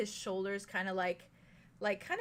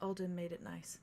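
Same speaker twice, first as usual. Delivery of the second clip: gentle, very soft, hushed, barely-there delivery; 2 semitones lower, 7 dB quieter than usual. Narrating a character who looks back, nods, and says this, in a very soft voice. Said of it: "he just very softly says".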